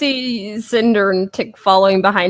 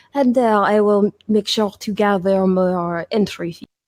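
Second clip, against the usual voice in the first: lowered, leaning-in aside. Davia glances at Tick, then leans toward Jupe, in a lowered voice. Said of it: "leaning in a bit to lower her voice".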